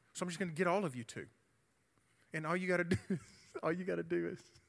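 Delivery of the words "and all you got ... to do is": talking through laughter, higher. Giving instructions to a room, laughing while talking. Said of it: "Addison made me laugh at her".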